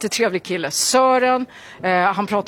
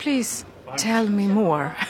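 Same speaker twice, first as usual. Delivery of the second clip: voice dropped slightly lower; 4 dB quieter than usual. Retelling a polite reply in a Eurovision interview; voice lowered a bit. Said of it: "man liksom sänker rösten lite".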